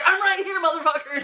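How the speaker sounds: mock rowdy shout, loud, brash, very high-pitched. Retelling a character barging in loudly: imitating a loud yell. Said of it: "Mal comes through loud as fuck".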